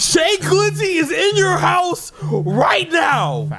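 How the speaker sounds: shouting. Amid a group's back-and-forth, one speaker cuts in, yelling. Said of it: "Why are you yelling about who his bitch fuck".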